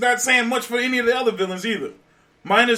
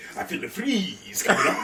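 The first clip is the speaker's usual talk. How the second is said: hushed, breathy near-whisper; 7 dB quieter than usual. Quoting a movie villain's puns: Arnold Schwarzenegger Mister Freeze impression. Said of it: "he threw in pun after pun".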